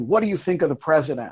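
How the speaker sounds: mock confrontational, pushy, aggressive, demanding tone. Retelling what a cab driver asked after nine eleven: imitating an aggressive question. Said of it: "says very aggressively".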